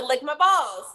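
ordinary talk, nothing marked

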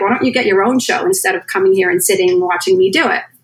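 usual speaking voice

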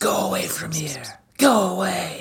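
high, hushed, eerie ambient whispering. Voicing the whispers from the corn: ambient spooky whispers. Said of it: "I'm trying to do some ambient whispers".

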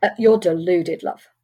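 mock condescending tone. Retelling what was said to a recruitment agency: retelling a condescending reply. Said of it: "I used the word love in a very condescending way on purpose".

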